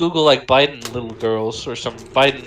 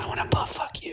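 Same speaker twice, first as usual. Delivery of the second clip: hushed, soft, breathy whisper right at the ear. Imitating someone leaning into a listener's ear: imitating Biden whispering. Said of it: "it's like he's whispering something".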